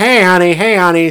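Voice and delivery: put-on drunken come-on voice. Retelling a movie scene, imitating a drunk man hitting on a woman: imitating a drunk man. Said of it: "this drunk dude".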